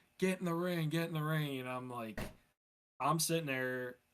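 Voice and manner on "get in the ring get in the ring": mock held-back jeer, put-on screaming. Retelling a wrestler screaming at a fan in the crowd: imitating Bam screaming. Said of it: "is screaming at one of the guys".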